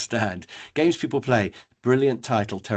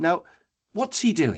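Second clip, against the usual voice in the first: normal talking voice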